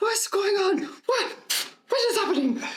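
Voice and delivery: very high, squealing, bad French accent. Describing an imagined figure scanning for threats; bad French accent as Pierre. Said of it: "I can't do a French accent".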